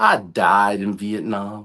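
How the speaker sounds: cocky, smug, swaggering, self-assured tone. Retelling what he said while driving, mock-cocky. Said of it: "all cocky".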